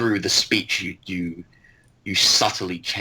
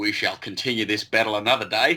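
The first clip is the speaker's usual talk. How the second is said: put-on Australian accent throughout; 3 semitones higher than usual. Quoting the Colonel after a sword fight: the Colonel's Australian accent. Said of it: "has an Australian accent".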